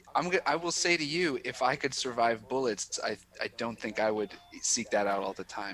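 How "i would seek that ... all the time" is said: normal talking voice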